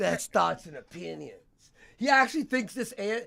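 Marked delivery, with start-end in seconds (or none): 0.0-1.3 put-on drunk, slurred voice. Retelling what a drunk Ralph said on his stream: imitating Ralph. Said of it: "he goes".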